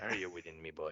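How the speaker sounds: very low, deep pirate voice. Repeating the Discord greeting bit after it is described: Pirate Palpatine voice. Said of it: "Pirate Palpatine going".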